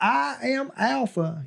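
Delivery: bad put-on Southern accent. Imitating how Alpha sounded in the teaser: Alpha's Southern accent. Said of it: "that is the horrible Southern accent".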